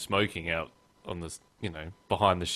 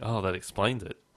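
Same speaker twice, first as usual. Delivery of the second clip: plain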